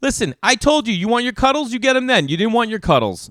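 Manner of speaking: put-on aggressive voice, loud and high. Retelling scolding a stubborn daughter at bedtime: imitating aggressive scolding. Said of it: "saying it, like, aggressive to her".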